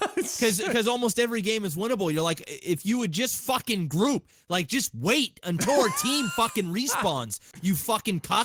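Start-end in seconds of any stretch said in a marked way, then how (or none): 2.4-8.5 bitter, angry, sweary salty rant. Retelling own words to a teammate who won't group up: imitating a salty angry rant. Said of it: "you're fucking salty".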